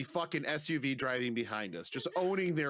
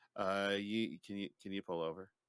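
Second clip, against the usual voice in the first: timid, halting, meek, low-voiced delivery; 5 semitones lower, 4 dB quieter than usual. Retelling what a man said while the speaker drove, imitating a meek plea. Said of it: "And then very meekly goes".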